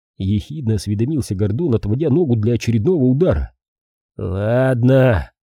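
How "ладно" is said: said with a grumble. [name], kicked by Gordon, finally gives in to him; grumbled. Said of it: "буркнул Шейн".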